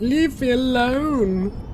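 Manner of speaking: put-on high, loud, whiny baby voice.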